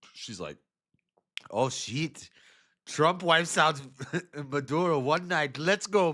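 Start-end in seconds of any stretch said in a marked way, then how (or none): 1.5-6.1 put-on Indian accent, pitched up. Acting out a woman who came groveling to trump, in a put-on indian accent. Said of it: "I'm doing like an Indian voice".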